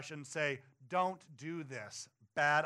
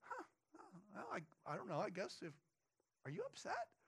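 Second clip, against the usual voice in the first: put-on calm voice, spoken quieter and faster; 4 semitones higher, 13 dB quieter than usual. Retelling Balaam's reply when God speaks to him, imitating Balaam, unbothered. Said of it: "he is such a cool cucumber".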